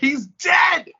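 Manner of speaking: mock piercing, very high, loud screeching cry. Recounting a phone call, the speaker quotes the caller's reply, imitating a loud screech. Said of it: "in the loudest screeching voice I've ever heard".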